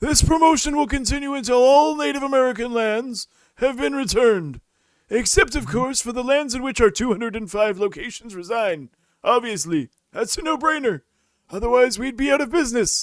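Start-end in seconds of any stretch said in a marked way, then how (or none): 0.0-8.9 put-on old man voice, higher and louder. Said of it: "a semi-Biden voice".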